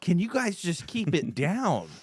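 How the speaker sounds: high-pitched, slow, loud yelling.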